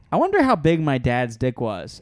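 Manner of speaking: plain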